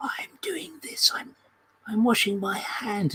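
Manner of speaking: gentle, concentrated, very soft, hushed ASMR voice. Describing odd YouTube videos, imitating women at the camera in a very soft, focused voice. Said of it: "in a very soft, fo- focused voice".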